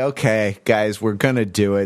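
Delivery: heavy, audible, weary resignation. Telling the guys they are going to do it, sounding resigned. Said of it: "can you sense the resignation in my voice as I say".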